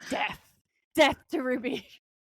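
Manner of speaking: play-acted, eager, gung-ho, totally on board. Recapping a scene where a character makes a dying wish, acting out eager Dean. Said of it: "he is so on board".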